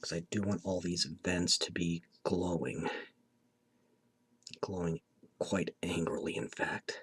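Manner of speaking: soft, whispered voice. Doing a quick bit of shading on the teeth, whispering. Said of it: "I keep whispering so much in these videos".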